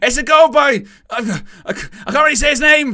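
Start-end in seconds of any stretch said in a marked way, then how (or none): 0.0-0.8 screamed goal call, much higher, louder. Speaker showing how he will call a goal, screaming goal call. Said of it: "me, which is I'll scream".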